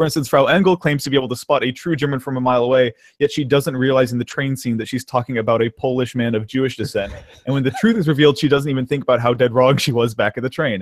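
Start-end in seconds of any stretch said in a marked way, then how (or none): none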